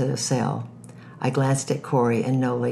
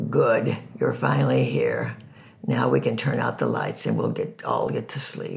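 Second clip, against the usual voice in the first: put-on rough, gravelly older woman's voice. Reading a story aloud, voicing an older cellmate: gravelly voice. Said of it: "said in a gravelly voice".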